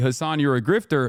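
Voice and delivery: ordinary talk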